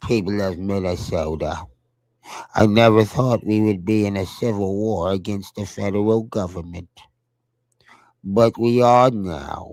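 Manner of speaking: droopy, mocking politician voice. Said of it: "Y'all like my droopy impression?".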